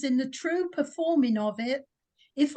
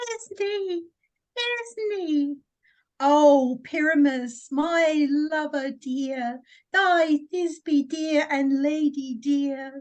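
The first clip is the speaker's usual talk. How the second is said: slow, drawn-out, tiny, overdone maiden voice. Retelling the casting, Bottom asks to play Thisbe too: Bottom's monstrous little voice. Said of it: "I'll speak in a monstrous little voice".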